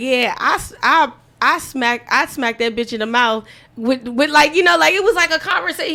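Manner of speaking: ordinary talk, nothing marked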